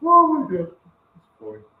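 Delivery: high, swooping talk spilling out through laughter. Reacting to the other speaker's joke, laughing while talking. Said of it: "I'm laughing too hard".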